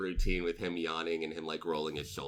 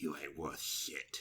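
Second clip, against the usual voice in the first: smug grinning gloating mockery, lower and quieter; 3 semitones lower, 8 dB quieter than usual. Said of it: "looks at you again with this shit-eating grin".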